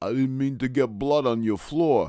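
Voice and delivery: bad, fake, put-on Brooklyn Italian accent. Narrating an attacker switching impressions for a laughing listener, bad Brooklyn Italian accent. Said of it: "suddenly dons a bad Brooklyn Italian accent".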